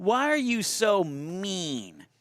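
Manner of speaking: very slow, mean, drawn-out put-on sing-song whine. Reading an audience question aloud as requested, in a whiny voice. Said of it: "He wants me to read this in a whiny voice".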